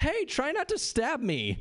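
put-on playful, teasing, light-hearted sing-song tone. Retelling a party story, quoting a drunk girl: imitating a playful warning. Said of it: "playfully goes".

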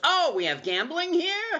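very high-pitched, taken aback, surprised tone. Retelling the hotel manager's reaction on learning of gambling, mock-surprised. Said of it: "Like all surprised".

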